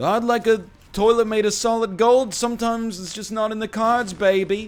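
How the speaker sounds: very high-pitched, loud voice. Mocking customers who ask for the manager, inserting an Austin Powers impression. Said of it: "insert the Austin Powers quote".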